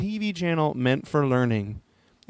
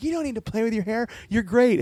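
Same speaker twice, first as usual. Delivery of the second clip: put-on high yell, called across a distance; 8 semitones higher than usual. Retelling calling out from a car window: imitating own yell. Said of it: "to yell across at the guy".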